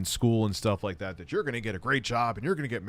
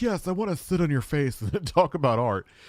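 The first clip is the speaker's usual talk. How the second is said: high, strained, constipated-sounding voice; 5 semitones higher than usual. Imitating a woman who kept saying she wanted to talk about art: imitating a strained constipated-sounding voice. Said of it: "It always sounded like she was constipated".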